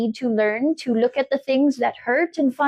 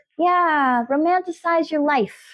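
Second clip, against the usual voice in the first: New York accent suddenly slipping in; 4 semitones higher than usual. Encouraging the listener, slipping into a new york accent. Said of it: "I got a New York accent there just now".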